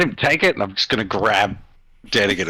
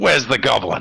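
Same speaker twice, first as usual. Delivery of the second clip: exhausted, worn-out, furious tone; 2 semitones higher than usual. Voicing a character grabbing a cleric at the door: exhausted and furious. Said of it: "exhausted and furious".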